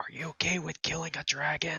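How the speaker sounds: hushed, soft, high half-whisper with no voice. Asking a sword in character whether it will kill a dragon, half-whispering. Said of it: "I'll whisper to the sword".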